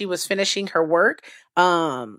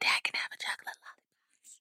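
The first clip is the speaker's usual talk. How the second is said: soft, close whisper. Retelling how a daughter asked her dad for a lollipop: imitating a whispered request. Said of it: "she goes and whispers in his ear".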